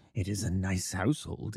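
low, hushed, confiding murmur. Holmes puts his lips to the narrator's ear, murmuring. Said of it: "he murmured".

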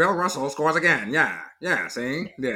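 put-on old-fashioned fast talker voice. Imitating an old-time sportswriter's style: old-timey fast talking voice. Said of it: "doing the old fast talking kinda".

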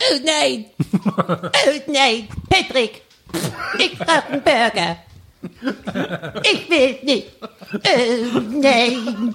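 high-pitched cartoon voice. Asked why the voice sounds like SpongeBob, attempting a SpongeBob impression. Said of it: "ich kann ihm gar nicht nachmachen".

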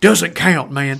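put-on Southern American accent. Speaker quotes Terry's reaction: Terry in Southern American accent. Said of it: "A Southern American accent".

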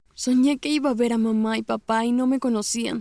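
plain

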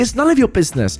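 high-pitched screaming rant. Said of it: "my sister starts screaming".

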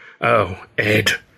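sighing in exasperation. Ed's wife answers his stubborn insistence: exasperated sigh. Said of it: "his wife sighed, exasperated".

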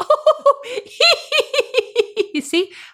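very high squeal, laughing, lighthearted.

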